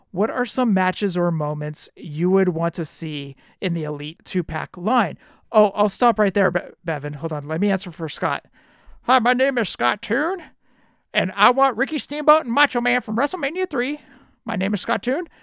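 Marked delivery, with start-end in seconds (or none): 9.0-15.2 put-on southern colonel voice, pitched up. Answering for Scott in front of him, mimicking him in a Colonel Sanders voice. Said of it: "in his Colonel Sanders voice".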